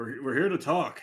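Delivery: big orc-style call. Throk raises his hands and calls out to the alerted fortress, big orc voice. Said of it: "big old orc orc voice".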